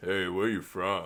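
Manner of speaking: slow, low creepy man's voice.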